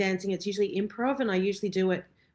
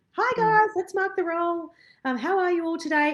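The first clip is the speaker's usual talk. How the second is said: high, forced, put-on fake-friendly voice, very high; 10 semitones higher, 4 dB louder than usual. Speaker retells walking into the studio after crying to teach: put-on fake greeting. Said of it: "put on a fake kind of".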